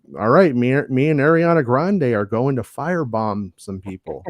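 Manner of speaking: usual speaking voice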